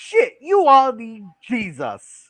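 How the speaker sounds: very slow, drawn-out, swooping put-on voice. Reading a chat member's message aloud: Suzanne's voice. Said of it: "I gotta get the right voice for this".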